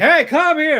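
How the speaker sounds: very loud, very high, shrill call. Describing a sporty character who grabs attention: imitating a louder voice. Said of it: "she has that louder voice".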